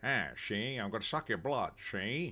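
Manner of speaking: put-on old-movie gangster voice, like a film mobster. Pitching a gangster-style Dracula line, done in an Edward G. Robinson gangster voice. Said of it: "Oh, wait, that's uh, Edward G. Robinson now".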